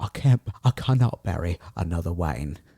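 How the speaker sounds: voice dropped very low and deep. Quoting the actor's later film line: low Michael Caine voice. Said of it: "his voice from all the cigars and brandy came very down. And he's like".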